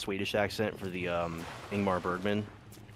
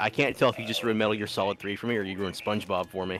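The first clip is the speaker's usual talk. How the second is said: ordinary delivery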